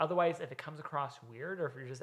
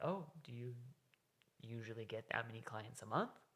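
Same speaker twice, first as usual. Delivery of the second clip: naive, innocent, wondering tone; 3 semitones lower, 7 dB quieter than usual. Asking someone in the fitness industry about clients: innocent, childlike curious tone. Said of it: "almost like a childlike tonality to it, uh, where you're asking it from almost a point of innocence".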